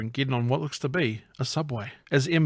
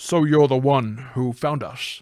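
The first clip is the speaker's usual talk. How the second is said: put-on Scottish actor voice; 4 dB louder than usual. Reading a line from the script aloud: Sean Connery voice. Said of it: "I'm trying to go Sean Connery now".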